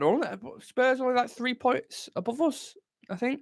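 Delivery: voice suddenly jumping to very high pitch.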